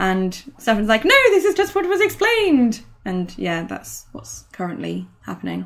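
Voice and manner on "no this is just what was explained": very high, squeaky, piping voice. Retelling what a player said at the table: Stefan's voice impression. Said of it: "I love your impression of Stefan's voice".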